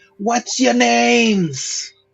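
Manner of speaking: yelling from far away. Player's character hangs halfway out a window and shouts up at people 120 feet away, yelling from a distance. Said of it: "I'm going to yell".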